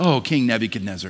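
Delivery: voice full of deep compassion. Reading the voice from heaven addressing king nebuchadnezzar, with a lot of compassion. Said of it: "I like to read that with a lot of compassion in that voice".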